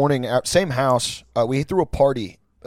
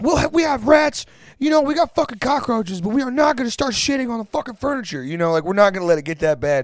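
imitated yelling, higher; 10 semitones higher than usual. Retelling how the roommates told a friend off: imitating people yelling. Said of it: "we were all yelling".

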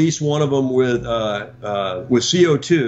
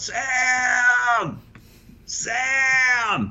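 mock very high calling yell, the name stretched out; 11 semitones higher, 3 dB quieter than usual. Retelling yelling at sam to ask if the raft is out: re-enacting yelling. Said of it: "I'm yelling".

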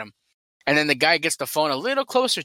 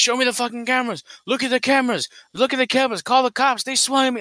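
put-on high-pitched, raised screaming; 8 semitones higher than usual. Retelling how Booster screamed at the security guard at the front desk; retelling Booster's scream. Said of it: "Booster's screaming at him like".

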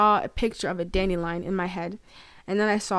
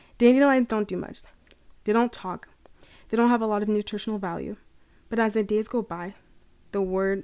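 tearful speech through crying. Speaker reflecting on a hard time they are going through, crying while speaking. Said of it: "I'm literally crying".

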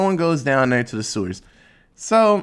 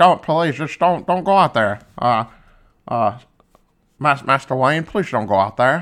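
mock classic movie star drawl. Retelling a movie scene, the butler's plea sliding into: Jimmy Stewart voice. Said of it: "it's Jimmy Stewart now".

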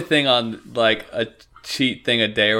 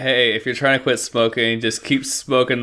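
ordinary talk, nothing marked

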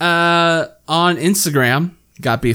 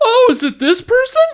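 very high-pitched blurted voice; 4 dB louder than usual. Retelling how a friend suddenly guessed the answer: imitating Mo. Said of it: "it's like".

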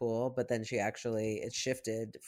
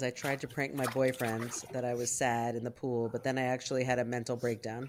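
normal talking voice

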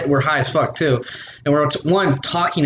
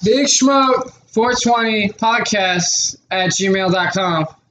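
louder raised voice, pitched up, drawn way out, very slow; 6 semitones higher than usual. Repeating the email address into the mic after being asked: saying it louder. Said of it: "Say that louder in the fucking mic".

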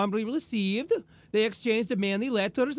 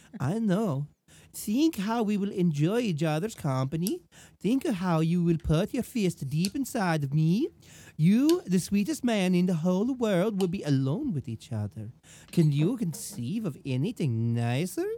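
put-on girly voice, pitched lower; 3 semitones lower than usual. Reading a letter aloud in the letter writer's voice: Belle's voice. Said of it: "I'll read it in Belle's voice".

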